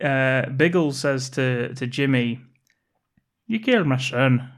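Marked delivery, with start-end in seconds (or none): 3.5-4.4 put-on speech in a Northern Irish accent. Quoting a film character's line: Northern Irish accent. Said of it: "that's Northern Irish, isn't it?".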